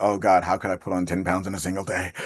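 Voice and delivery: ordinary talk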